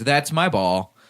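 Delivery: flat voice with no inflection.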